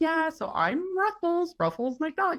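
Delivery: sweet, cute, very high cartoon-character voice. Retelling what the guy behind the muzzle said, in Ruffles McDonald's cute little voice. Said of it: "this very cute little voice".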